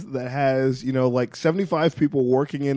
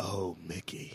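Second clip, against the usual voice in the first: put-on British actor voice, lower and quieter; 7 semitones lower, 18 dB quieter than usual. Acting out the doctor's line: David Tennant impression. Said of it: "that was David Tennant doing his "Oh,"".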